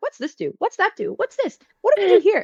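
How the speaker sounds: put-on very high, swooping little-kid voice. A player describes acting as a toddler in a store: toddler voice. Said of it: "just gonna be a toddler".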